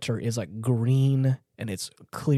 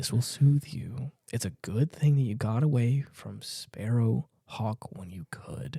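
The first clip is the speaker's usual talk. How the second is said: put-on whisper, quieter; 4 dB quieter than usual. Speaker recounts a stranger speaking to a boy, imitating a whisper. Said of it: "he's whispering to this boy".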